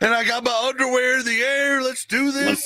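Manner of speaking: put-on very high-pitched, drunk-sounding, hyped-up delivery. Contrasting how one talks sober and drunk: imitating own drunk self. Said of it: "And if I'm drunk, I'm like".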